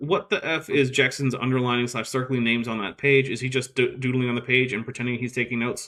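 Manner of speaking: normal talking voice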